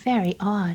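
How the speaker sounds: ordinary delivery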